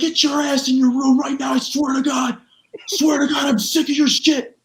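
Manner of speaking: acted, shrill, very high scream. Retelling how someone screamed at the speaker: imitating someone screaming. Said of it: "he would scream at me".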